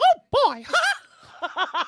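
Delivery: squeaky voice, high and loud. Speaker with a naturally high voice shows off a Mickey Mouse impression. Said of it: "Like Mickey Mouse, like, I can do".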